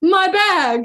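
very high, loud, shrill theatrical cry. Retelling a man crying out about his bag: imitating a dramatic cry. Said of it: "He goes".

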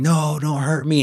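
high, shrieking scream. Retelling a man on his couch during a lock change, imitating him screaming. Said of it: "while he's screaming this".

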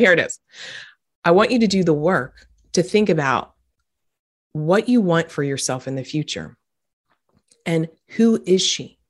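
heavy, very intense, focused delivery. Speaker urging listeners to do the radical work, in a very intense voice. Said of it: "I'm talking in this like very intense".

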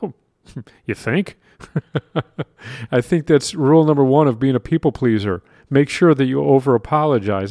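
dry, mocking, heavily sarcastic tone. Answering own question about who over-apologizes: sarcastic. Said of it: "a little bit of sarcasm there".

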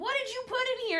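yelled, high-pitched, exasperated-sounding voice. Retelling an aunt at the airport over a heavy suitcase: imitating the aunt yelling. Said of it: "and she's yelling".

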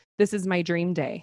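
ordinary delivery

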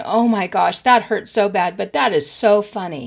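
plain

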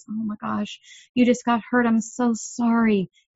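mock gentle, sweet, sympathetic, empathetic tone. A parent reenacting what they told their hurt child, retelling a sweet, empathetic voice. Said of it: "in a sweet, empathetic voice".

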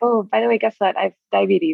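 plain

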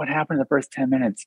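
high, hushed whisper. Recalling being lost at a movie, re-enacting whispering a question to someone. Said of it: "I literally like whispered to someone like".

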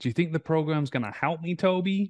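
put-on American accent. Quoting a past client's question about the program: American accent. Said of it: "In her American accent".

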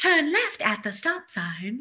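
poorly done put-on Australian accent. Describing an audiobook role as Australian Siri and giving an example, bad Australian Siri impression. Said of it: "I can't do an Australian accent very well".

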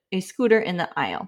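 normal talking voice

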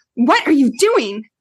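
hard, stern, menacing, threatening tone. Retelling catching the child at something: imitating own threatening tone. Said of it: "If I say it just like that".

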